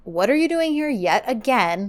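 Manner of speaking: ordinary talk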